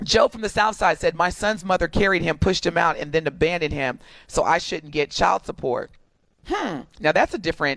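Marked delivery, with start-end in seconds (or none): none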